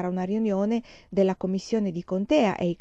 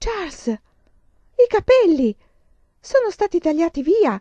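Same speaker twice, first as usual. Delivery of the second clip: very high, loud, drawn-out exclaiming cry; 10 semitones higher, 7 dB louder than usual. Woken in the night, mother speaks to her husband, exclaiming. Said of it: "esclamò mamma".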